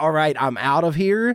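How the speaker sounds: ordinary talk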